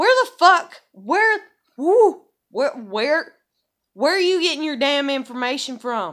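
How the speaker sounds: irritated, exasperated tone, stumbling over the words. Recounting what he wrote to her and her reaction, irritated. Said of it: "but I'm so like irritated".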